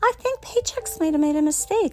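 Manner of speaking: put-on sweet voice. Retelling a call about a late paycheck, the speaker quotes their own words in a sweet voice. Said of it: "I was using my sweet voice".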